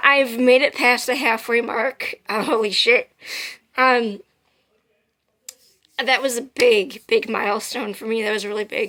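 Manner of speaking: emotional, choking-up voice near tears. Speaker gives an update just after crying, getting emotional. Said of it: "I'm getting emotional".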